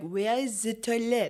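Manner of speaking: put-on, fake French accent. Speaker showing how to speak English in France, put-on French accent. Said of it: "put on a French accent".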